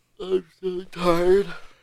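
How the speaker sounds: talking through a yawn. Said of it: "You yawning just made me yawn".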